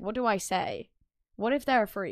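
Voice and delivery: ordinary talk, nothing marked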